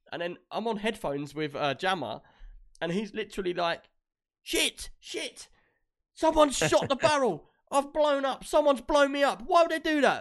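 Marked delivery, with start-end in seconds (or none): 4.4-10.2 very high, shrill, loud screaming outburst. Retelling a game on headphones, the speaker acts out Jammer: imitating Jammer screaming. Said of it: "he's screaming".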